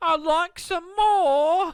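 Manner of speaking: loud squeaky pleading elf voice. Quoting the orphanage line from the story in a Dobby voice. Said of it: "I love how you make him Dobby".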